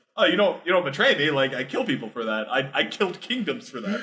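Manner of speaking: mock unbothered, cool, calm, matter-of-fact menacing tone. Retelling a story character's threat to a phone salesman: imitating a calm threat. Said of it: "very calmly".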